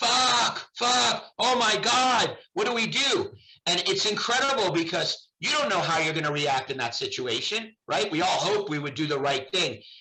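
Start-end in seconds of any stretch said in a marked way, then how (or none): 0.0-3.3 acted very slow, high, stretched-out screaming. Retelling a woman's taped phone call during a crisis, imitating her screaming. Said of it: "and she's screaming".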